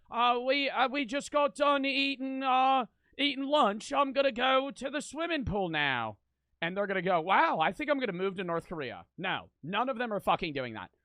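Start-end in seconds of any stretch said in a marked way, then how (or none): 0.1-6.1 put-on British accent, light, lifted and high. Imitating a random ten-year-old on social media, in a British accent. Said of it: "British accent".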